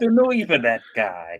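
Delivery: put-on New York accent. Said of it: "So they talk in New York".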